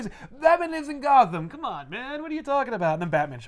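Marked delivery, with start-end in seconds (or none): 0.4-2.9 put-on club guy character accent, higher. Retelling a comic scene, voicing a guy at an Amsterdam club: put-on accent for an Amsterdam club guy. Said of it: "Is that your Amsterdam accent?".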